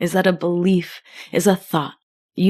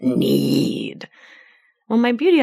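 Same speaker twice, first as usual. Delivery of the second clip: low, rough, creaky, swooping gremlin croak; 4 semitones lower than usual. Speaker shows how their inner voice talks about needs; gremlin voice. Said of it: "like my gremlin voice comes out".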